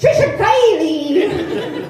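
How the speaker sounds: put-on Irish accent. The speaker mimics how their name was just announced, in an Irish accent. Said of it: "the Irish accent you put on my last name there".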